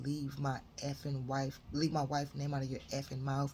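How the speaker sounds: ordinary delivery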